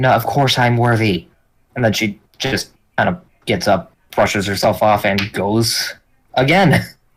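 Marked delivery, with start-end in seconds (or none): 0.0-1.3 exasperated, annoyed, irritated tone. Player whose sword asks again whether she is worthy, answering annoyed. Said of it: "just annoyance just radiating off of you".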